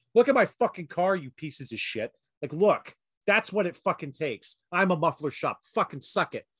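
imitated screaming. Retelling yelling at the shop staff from a car: retelling screaming at shop. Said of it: "Just screaming by Pietro's Pizza".

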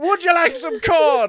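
shrill, very loud, very high, botched spooky voice. Retelling an actor in a corn maze trying to sound creepy: imitating a failed creepy voice. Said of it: "he's trying to be creepy".

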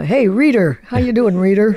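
loud, projected, called-out hey-there tone. Imitating a man the speaker knew who talked very fast. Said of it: "he talked very fast".

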